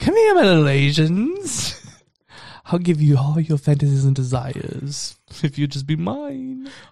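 swooping witch voice, "Asians" drawn out. Imagining the other speaker as Ursula luring people: Ursula voice. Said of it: "I imagine you, like, being Ursula".

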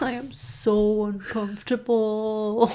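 slow, flat, deadpan delivery.

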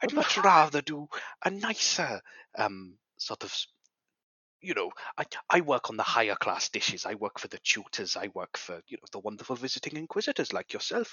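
loud, fully committed, put-on Welsh accent. In character, addressing a visiting inquisitor, in a Welsh accent. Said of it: "you do sound like Rob Brydon".

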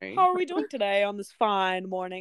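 put-on old-Hollywood transatlantic accent. Joking about how a kid would never talk: mock transatlantic accent. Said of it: "They have a transatlantic accent".

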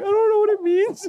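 very high, frightened laughing, acted out. Retelling their answer while someone yelled at them, acting out scared laughing. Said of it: "I was like scared laughing".

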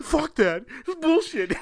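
play-acted, very high-pitched, furious, mad outburst. Retelling a friend's reaction to a film ending: imitating someone angry. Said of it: "He's all mad".

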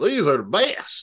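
thick, laid-on Southern twang character voice.

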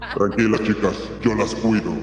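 very low broadcast presenter tone. Closing a podcast episode, addressing the girls listening; radio announcer voice. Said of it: "con esta voz de locutor".

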